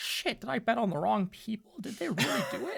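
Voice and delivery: hushed, slightly high, half-whispered aside. Voicing a spectator in a silent crowd: half-whispering crowd member. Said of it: "You might hear a whisper that says".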